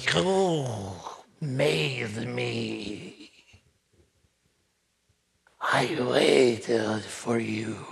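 weird, wet, gurgling voice, "me" drawn out. A game NPC speaks to the players who assembled it, Johnny Wet Voice's wet voice. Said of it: "this weird, wet voice in the room".

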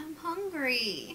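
plain cat character voice. Delivering a line as a cat spotting another cat: voicing a cat. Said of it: "okay, you're a cat".

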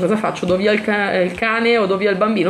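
ordinary talk

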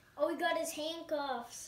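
normal talking voice

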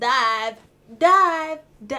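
high, loud, drawn-out hype call.

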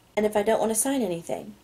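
ordinary delivery

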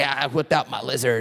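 put-on hoarse, croaky, raspy, rough young boy's voice. Speaker quotes a 13-year-old kid he met: Froggy voice. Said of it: "he spoke like Froggy from the Little Rascals".

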